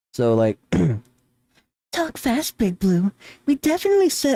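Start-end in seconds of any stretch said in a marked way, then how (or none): 2.0-4.4 very high-pitched, feminine-sounding voice. Speaker tries a line in the Rouge voice they came up with: high female-sounding Rouge voice. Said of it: "my very high registry, and I'm like putting on a female sounding voice".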